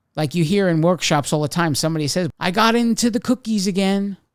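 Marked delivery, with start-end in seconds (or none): 2.4-4.2 mock cutesy, playful, high, cute giggly tone. Imitating someone heard in workshops: mock-cute, giggly tone. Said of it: "he said it in a way that it sounded cute".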